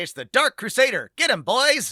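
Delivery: very high, swooping 1940s mid-Atlantic accent. Demonstrating one way to voice a hero in a superhero game, 1940s mid-atlantic accent. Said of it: "mid-Atlantic like forties accent".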